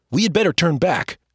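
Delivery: clearer, braver voice. Asked by his brother why he is whispering, the narrator answers in a clearer, braver voice. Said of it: "In a much clearer and braver voice".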